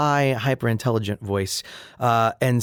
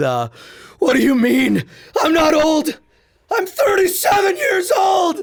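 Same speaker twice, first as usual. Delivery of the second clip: goofy yell, much higher, slower; 8 semitones lower than usual. A voice actor quoting his character's silly line, in a goofy screamy character voice. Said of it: "when he's silly".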